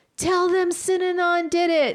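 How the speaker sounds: mock yelled, very high-pitched. Retelling how a bitten man ran out calling for help: imitating someone yelling. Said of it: "he's, like, yelling".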